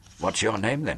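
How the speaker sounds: whispering hoarsely. The narrator asks a uniformed woman her name, in a hoarse whisper. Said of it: "I whispered hoarsely".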